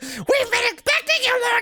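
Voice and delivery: tiny, squeaky, very high-pitched voice. Giving a game character a voice, do Toad's voice. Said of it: "I think he should have Toad's voice".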